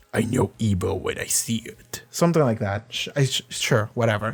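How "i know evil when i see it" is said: slow, whispered character voice, dragging each word. Trying the quote again after a bad try: Damien Darkblood impression. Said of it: "That was a terrible impression".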